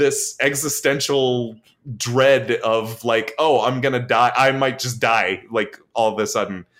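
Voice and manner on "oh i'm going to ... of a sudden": ordinary talk, nothing marked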